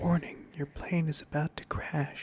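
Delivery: whispered softly and breathily. Imitating a cockpit alarm that is too soft to hear: whispered warning. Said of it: "It's like whispering it".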